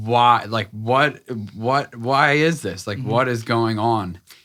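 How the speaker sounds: raw, loud screaming. Retelling breaking down alone in the car: retelling screaming at God. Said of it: "I'm literally screaming at God".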